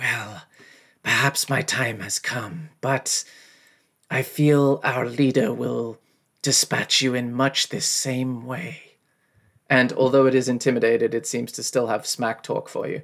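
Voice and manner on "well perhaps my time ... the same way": slow, sibilant, hissing snake voice. Narrating a game, voicing a snake-headed creature speaking to the player: hissing snake voice. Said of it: "it says in a sort of hissing voice".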